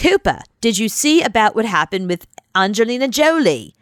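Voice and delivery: bad, terrible put-on Australian accent. Retelling a phone call from his producer at Sunrise, in a terrible Australian accent. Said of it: "It's a terrible Australian accent".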